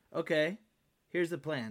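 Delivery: ordinary delivery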